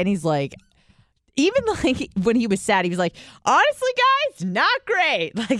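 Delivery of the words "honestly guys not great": enthusiastic, very high, upbeat voice. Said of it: "he was still enthusiastic about it".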